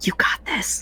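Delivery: very quiet, soft whisper, encouraging tone. A player's character comes up behind another to cheer them on, whispering encouragement. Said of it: "I'll just whisper to them".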